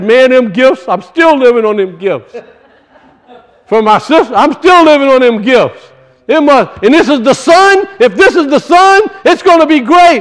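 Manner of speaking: mock-excited voice. Storyteller acts out a man seeing Rahel and getting all excited. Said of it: "he gets all excited".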